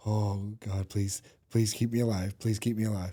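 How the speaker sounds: mock, soft, desperate, despairing pleading tone. Voicing the patient during the treatment, mock despairing plea. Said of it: "The sigh of despair on the patient".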